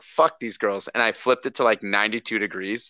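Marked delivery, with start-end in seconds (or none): 0.2-0.9 put-on angry outburst. Retelling reacting to a note on the thermostat: imitating own angry outburst. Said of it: "so I was so pissed".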